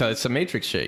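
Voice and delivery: ordinary talk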